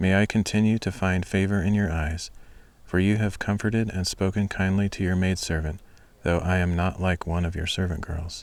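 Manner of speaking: ordinary delivery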